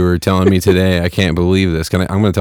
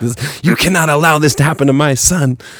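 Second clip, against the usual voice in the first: put-on, pitched-up, angry yell; 9 semitones higher than usual. Speaker acts out his mom at school yelling at the principal. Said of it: "She's like yelling at the principal".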